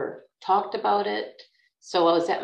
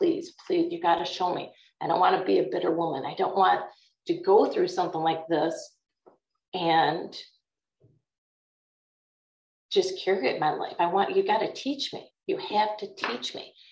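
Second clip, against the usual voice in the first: acted, desperate, repeated pleading and begging. A woman retells how she begged God; retelling begging. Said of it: "I just begged him".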